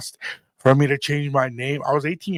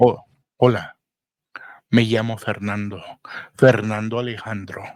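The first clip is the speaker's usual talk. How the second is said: suave, debonair voice, pitched much lower; 4 semitones lower than usual. Showing how to introduce yourself to a lady, in a debonair voice. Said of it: "you've got that debonair voice".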